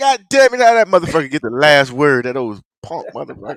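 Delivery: ordinary delivery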